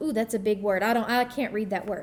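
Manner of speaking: ordinary talk, nothing marked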